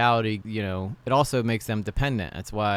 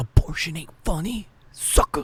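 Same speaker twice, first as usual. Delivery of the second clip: whispered, mocking tone. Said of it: "He's like".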